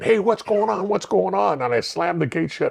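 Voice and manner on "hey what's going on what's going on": mock screaming in a high yelling voice. Retelling how locked-up inmates reacted during an earthquake, imitating inmates screaming. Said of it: "they started screaming".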